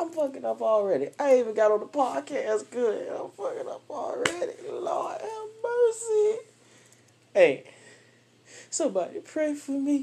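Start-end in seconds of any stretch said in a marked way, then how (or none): 3.1-10.0 horrible, high, wavering fake sobbing voice. Podcast host back at the microphone asks listeners to pray: horrible fake crying voice. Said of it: "That was a horrible crying voice".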